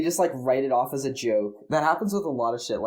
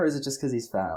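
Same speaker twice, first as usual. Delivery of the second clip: ordinary delivery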